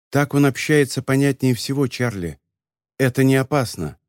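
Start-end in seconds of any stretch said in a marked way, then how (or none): none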